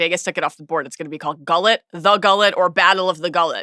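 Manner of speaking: normal talking voice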